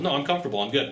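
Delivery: ordinary delivery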